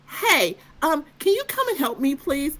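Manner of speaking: put-on desperate tone. Retelling calling the attendant for help: retelling own desperate plea. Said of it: "I'm desperate at this point".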